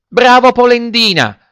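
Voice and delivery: tiny, squeaky, very high-pitched little-voice shout. Narrator reading a story, a voice from nowhere calls out: tiny little voice shouting. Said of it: "Gridò la solita vocina".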